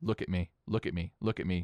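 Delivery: ordinary talk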